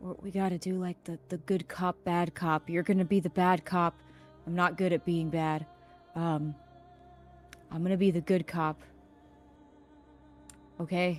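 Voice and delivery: put-on, acted-out whisper. Retelling what he whispered into someone's ear, retelling a whisper. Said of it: "I whisper in his ear".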